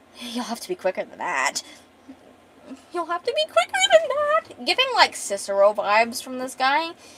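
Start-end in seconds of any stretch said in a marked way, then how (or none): 0.2-4.7 cackling, high, swooping, mad-laughing maniacal gloating. Retelling a villain taunting a fighter who missed: imitating maniacal laughing. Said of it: "he's maniacally laughing".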